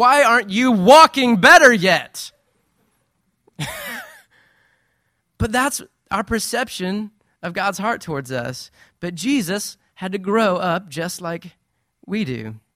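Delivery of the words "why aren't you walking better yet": loud, slow mock scolding. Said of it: "I'm not berating her saying that".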